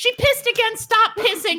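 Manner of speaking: yelling, high and scolding.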